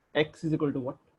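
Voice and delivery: ordinary talk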